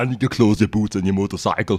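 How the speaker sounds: put-on Austrian action-hero accent. Retelling a stream spent in a put-on accent: Arnold Schwarzenegger accent. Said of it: "have my Arnold accent on all game".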